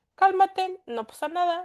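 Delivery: high-pitched, soothing, calming and reassuring voice. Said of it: "le dice a la amígdala".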